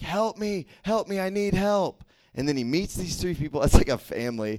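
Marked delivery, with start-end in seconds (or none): 0.0-2.0 mock screaming, high, very slow and dragged out. Describing a movie scene to the audience, imitating the man screaming. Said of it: "he's like screaming".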